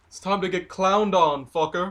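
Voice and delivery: loud, high yell in a put-on character voice. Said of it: "I yell over at him".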